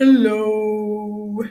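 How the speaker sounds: very deep, lowest possible voice, loud and drawn out. Before reading a story, the speaker asks everyone to say hello low, saying hello in a low voice. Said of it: "Can you make your voice low?".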